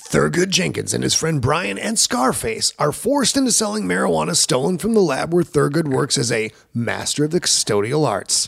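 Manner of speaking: put-on movie-style narrator voice. Reading a film's plot to viewers who have not seen it, reading in movie voice. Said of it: "read in movie voice".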